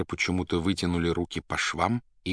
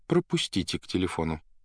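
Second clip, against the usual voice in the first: ordinary delivery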